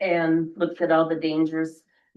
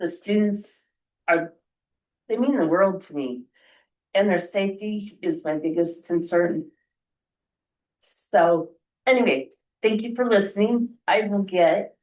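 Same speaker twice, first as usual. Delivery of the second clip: getting emotional, much faster; 2 semitones higher than usual. A bus driver tells the listeners that student safety is their biggest concern, getting emotional. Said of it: "I get emotional, sorry".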